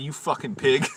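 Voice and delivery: acted-out yelling. Retelling yelling at a coworker who played loud music: retelling a yell. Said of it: "I just fucking yelled at him".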